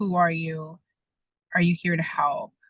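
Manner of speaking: ordinary talk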